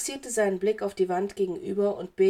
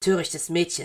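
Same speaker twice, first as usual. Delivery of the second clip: spoken in a hiss; 3 semitones lower than usual. Narrator voices a man speaking to a young woman, hissed. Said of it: "zischte er stattdessen".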